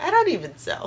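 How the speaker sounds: mock self-amused talk through laughter. Retelling what mom said during fabric shopping, imitating someone laughing while talking. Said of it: "laughing and chuckling".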